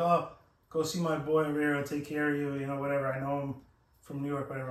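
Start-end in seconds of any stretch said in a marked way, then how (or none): none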